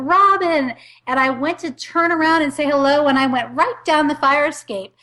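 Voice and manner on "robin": loud, high-pitched shouted call. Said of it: "he yells for me".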